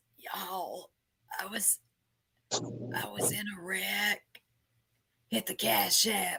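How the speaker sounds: mock hushed, very quiet voice. Recalling Tony going live from a hospital bed, imitating Tony's hospital-bed voice. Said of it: "going live from the hospital bed with that voice".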